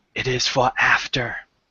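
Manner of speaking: secretive half-whisper, close and confiding. A character moves closer to the listener and half-whispers; half-whispering. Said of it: "and he whispers".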